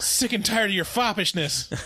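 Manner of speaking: high, loud insulting scream. Joining a retold movie scene, a mother at a locked door: imitating a mother screaming insults. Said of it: "as she's screaming these in-, insults and slurs".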